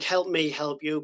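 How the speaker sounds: plain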